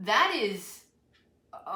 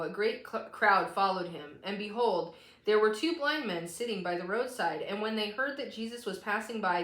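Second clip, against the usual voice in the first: normal talking voice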